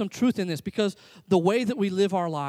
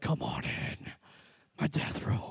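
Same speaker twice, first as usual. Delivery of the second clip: whispered put-on masked superhero voice; 9 dB quieter than usual. Imagining inviting people into your death room: Batman voice. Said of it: "you get in your Batman voice".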